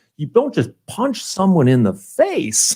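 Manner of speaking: mock disdainful, scornful delivery, made to sound dirty. Repeating a judge's line the speaker admires: imitating Judge Middleton's disdain. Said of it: "he says it with such disdain".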